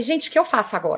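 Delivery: ordinary delivery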